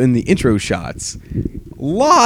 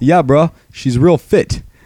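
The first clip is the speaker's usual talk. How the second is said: terrible fake British accent, slow. Retelling how the British guys talked about the girls, in a bad British accent. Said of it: "That was my best effort at that accent".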